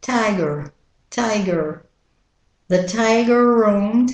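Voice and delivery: American accent, tiger roamed run together with one r. Demonstrating how the word tiger is said in an american accent. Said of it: "And with the American accent".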